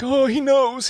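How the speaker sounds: high-pitched, frantic, panicked freaking out.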